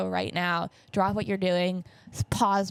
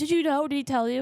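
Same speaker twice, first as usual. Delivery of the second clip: play-acted tearful screaming and sobbing, high and rushed; 7 semitones higher than usual. Retelling mom's call about the divorce, imitating her sobbing and screaming. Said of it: "my mom is like screaming, crying, like sobbing".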